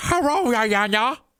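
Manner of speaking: very high pitch, heavy exaggerated Chinese accent. Act out Jen greeting Diana, who has called her, as a Jen impression. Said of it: "this impression".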